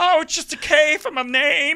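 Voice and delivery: put-on squeaky puppet child voice, very high and loud. Recreating a talk with niece Clara as a child, doing her Muppet-like voice. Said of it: "Like she was a literal Muppet".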